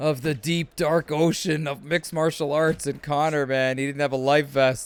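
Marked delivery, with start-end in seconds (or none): none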